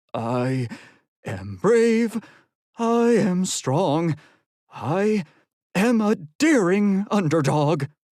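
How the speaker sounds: nervous, slow, high-pitched voice. Narrator reading Eugene's words at a locker door, murmured under breath. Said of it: "Eugene murmured under his breath".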